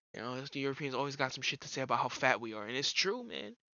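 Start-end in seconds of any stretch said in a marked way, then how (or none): none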